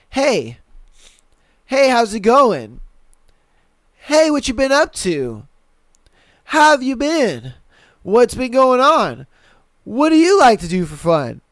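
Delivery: animated, swooping run of lines. Acting out a guy's unanswered messages on a dating app: imitating a guy's texts. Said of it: "I could picture that message thread now. It's like".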